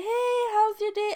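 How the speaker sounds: eager, very high-pitched, excited voice. Describing calling a brother on the phone, acting out an excited greeting. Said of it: "I call him excited".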